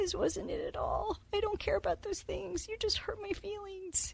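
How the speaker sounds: small, high, soft little voice. Speaker imitating how she talks, in a little voice. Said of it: "this little voice going".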